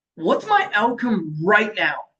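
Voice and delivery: strong, firm, forceful delivery. Guiding listeners on a question to ask themselves, said with strength. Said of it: "say it with a bit of strength".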